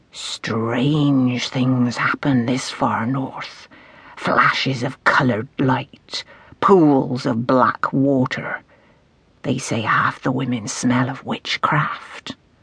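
very slow, dramatic hush, strange drawn out. Reading a novel, a man at a bar tries to frighten the narrator in a theatrical hush. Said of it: "He dropped his voice to a theatrical hush".

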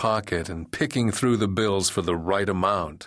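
plain reading voice

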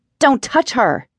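hissing through clenched anger. Cradling her fallen sister, a woman slaps a man's hand away, hissing. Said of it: "she hissed".

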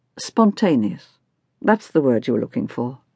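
ordinary delivery, nothing marked

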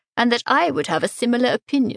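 usual speaking voice

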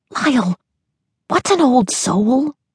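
pressing, urgent half-whisper pitched very high. A girl nudges her brother awake to ask him something, urgent half-whisper. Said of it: "she whispered urgently".

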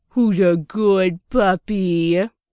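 put-on very slow, drawling, gushy, sappy baby voice. Angie pats a wolf's head and talks to it, sappy baby voice drawl. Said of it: "she drawls to the wolf in the most sappy baby voice possible".

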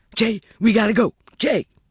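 very high, frightened, scared shouting yell. A narrator reads a kid calling out to Jay as a siren sounds, scared shouting. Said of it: "the kid shouting, scared".

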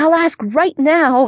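high, eager, excited little squeal. A girl on the phone with a friend who invited her over, squealing. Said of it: "Rebecca squealed".

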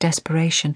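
ordinary delivery

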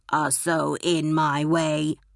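very slow, deep, buzzing robot drone. A robot cuts in on the Doctor, deep, buzzy chainsaw-like voice. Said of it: "cut in a deep, buzzy voice like a talking chainsaw".

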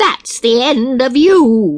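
loud, cruel, queen-like crying out. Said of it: "cried the cruel queen".

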